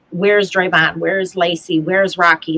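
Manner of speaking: normal talking voice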